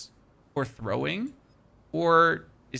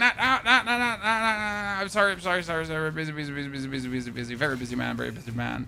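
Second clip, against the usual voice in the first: curt, dismissive, repetitive delivery; 3 semitones higher than usual. Acting out the player refusing to hunt beasts: mock dismissive player. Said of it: "You're like".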